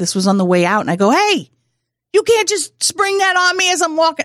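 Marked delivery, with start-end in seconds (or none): 1.1-4.2 very high, playful, joking shout. Retelling calling back to someone in a lobby on the way out: retelling a joking yell. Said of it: "I'm yelling in the lobby".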